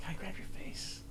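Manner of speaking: unvoiced, very soft whisper.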